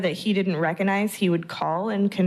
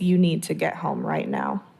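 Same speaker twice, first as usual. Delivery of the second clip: deadpan delivery, faster; 3 semitones lower than usual. Recalling a phone call, quoting what he said, retelling a deadpan order. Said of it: "he just said in this deadpan voice".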